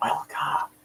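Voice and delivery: soft, close, barely voiced whisper. Leaning over to a new student in class: whispering. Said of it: "I lean over and just kind of whisper".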